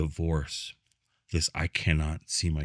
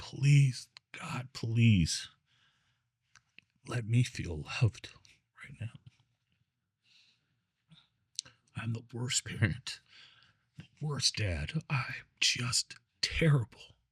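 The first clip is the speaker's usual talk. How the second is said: put-on high, tearful, sobbing crying voice; 6 semitones higher than usual. Recalling Thanksgiving in jail, face down by his bed, retelling a tearful prayer. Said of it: "got on my face and just cried".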